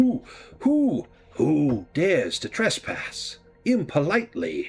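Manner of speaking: slow, swooping, high-pitched hooting owl voice. Voicing an owl door knocker that answers a knock: voice of an owl door knocker. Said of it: "You hear a voice that says".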